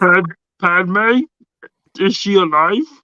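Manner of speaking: high frog-puppet voice doing a dark villain. Asked to say the Darth Vader line again in that voice: Kermit the Frog as Darth Vader. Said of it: "If Kermit the Frog was Darth Vader".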